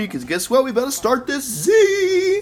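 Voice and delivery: excited voice, very high, rising and swooping. On Thanksgiving with the boys, about to start the Z, excited voice. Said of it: "What kind of voice is that?".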